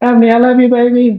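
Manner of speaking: very high, light, lovestruck voice. Speaker recreates a voice message he'd send to emily: retelling a light loving voice message. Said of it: "it'll sound just like this".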